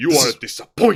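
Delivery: low, thuggish, menacing gangster voice. Imagining a gangster holding a gun to someone: menacing gangster voice. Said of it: "the ugliest, most menacing gangster you can imagine holding a gun".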